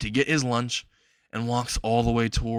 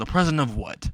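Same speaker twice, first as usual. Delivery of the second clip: plain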